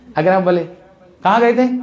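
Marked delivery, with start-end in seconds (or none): 1.2-1.9 high, accusing voice. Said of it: "इसका मतलब जहाँ गए थे, आप सही जगह पर नहीं गए".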